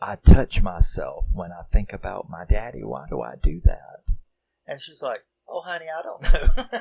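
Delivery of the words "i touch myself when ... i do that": conspiratorial, secretive, confiding tone. Retelling a man talking to a woman on the phone: imitating a secretive tone. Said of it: "in a very secretive like tone".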